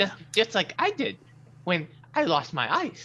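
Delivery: small creature voice. Voicing a small flying elephant creature greeting the group: small flying elephant creature voice. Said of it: "small-ish flying elephant creature".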